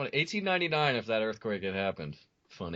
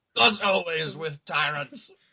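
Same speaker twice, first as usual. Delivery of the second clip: acted, slow, stretched-out, loud, high yell; 7 semitones higher, 5 dB louder than usual. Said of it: "yelling that makes it way funnier".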